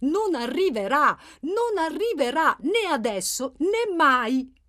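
firm, exasperated, slow. Angelo repeats his words to Settimio, who isn't listening: louder, touch of exasperation. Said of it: "lo ripeté più forte, con una punta di esasperazione nella voce".

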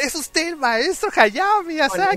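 mock yelling. Retelling how a guy yelled right in someone's face: retelling a shout in his face. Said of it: "literalmente le gritó en su cara".

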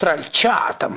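high, furious, raging outburst. Narrator reads an old woman snapping at her troll son, enraged outburst. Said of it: "взъярилась старуха".

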